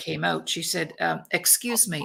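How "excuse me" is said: put-on mimicked child voice sounding like a grown-up. Retelling what a five-year-old girl said: imitating a child talking like an adult. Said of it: "this is how she talked".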